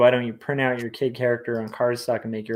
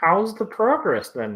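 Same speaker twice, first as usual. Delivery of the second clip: over-the-top put-on Canadian accent, pitched up; 7 semitones higher than usual. Repeating a question to another speaker for a joke: exaggerated Canadian accent. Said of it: "That sounded very Canadian".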